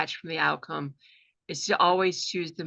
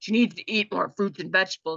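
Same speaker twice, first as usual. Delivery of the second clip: put-on grumbly old man voice; 3 semitones higher than usual. Retelling what one of the angry voices said, in a grumbly old man voice. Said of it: "it was this grumbly old man voice".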